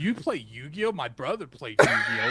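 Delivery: put-on, swooping voice dripping with disgust. Retelling what a girl said on seeing the cards: imitating a disgusted voice. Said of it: "kind of like a disgust voice".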